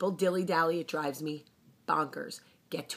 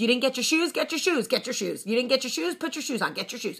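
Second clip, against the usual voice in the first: acted-out, fast, rattled-off, pitched-up impatient nagging; 8 semitones higher, 3 dB louder than usual. A parent acting out mornings waiting on the children: mock impatient nagging. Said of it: "I have no patience".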